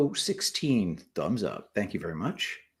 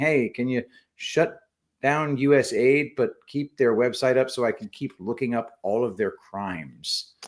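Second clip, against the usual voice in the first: plain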